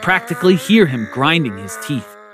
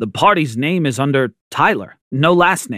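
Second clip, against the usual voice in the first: ordinary delivery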